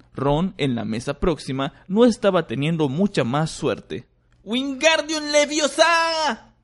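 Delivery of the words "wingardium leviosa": very high-pitched, shrill, yelled voice. Narrator reads Ron, having little luck with the spell; shouting. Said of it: "gritó".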